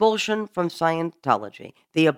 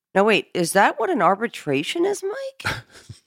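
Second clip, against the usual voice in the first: dripping sarcasm, swooping up high; 5 semitones higher than usual. Asking another speaker about a committee of evidence: sarcastic. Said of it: "enough of the sarcasm there".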